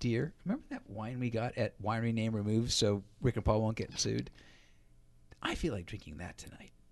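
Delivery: low, sultry, coaxing, seductive voice. Podcast host acting out a woman sidling up to a man, sexy voice. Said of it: "that was me being sexy".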